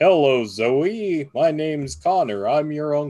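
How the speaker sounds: play-acted, unhurried, slow, stretched-out delivery. Retelling the nephew introducing himself to his daughter, booming voice as Connor. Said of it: "Just booming fucking voice".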